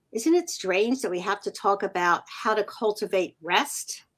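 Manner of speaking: ordinary delivery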